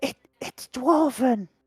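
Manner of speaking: hushed whisper. A character in a tabletop game answering a question about his hands, whispering. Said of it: "I whisper".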